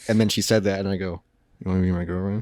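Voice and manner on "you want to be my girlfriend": half-swallowed, murmured under the breath. Retelling asking someone to be his girlfriend: imitating own murmur. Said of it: "I murmured it under my breath".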